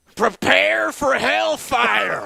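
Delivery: very high, very loud, raspy, hard spat "p". Asked to hear a Brim impression, the speaker delivers it with heavy plosives. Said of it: "you brought out the plosive sounds there so well".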